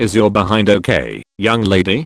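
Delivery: ordinary talk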